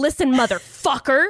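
mock evil, intimidating voice. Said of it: "super evil and intimidating all of a sudden".

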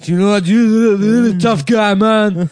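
put-on very high, very loud Brazilian accent. Imitating a Brazilian man praising a listener, Brazilian accent. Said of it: "I love that Brazilian accent".

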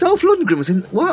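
high-pitched incredulous squeak. Reacting to a story about his first cycling magazine, high-pitched incredulous squeak. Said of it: "squeaked [name] in a high pitched voice of incredulity".

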